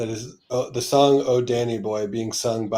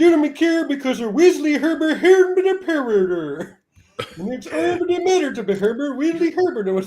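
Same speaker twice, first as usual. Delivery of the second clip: put-on Swedish gibberish voice. Reading an open letter's first sentence aloud, in a Swedish Chef voice. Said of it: "put normal English into the Swedish Chef voice".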